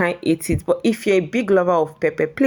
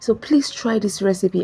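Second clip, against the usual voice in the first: soft, hushed, half-whispered urging tone; 3 semitones higher than usual. Cook talking viewers through a recipe, half-whispering. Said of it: "I don't know why I'm whispering".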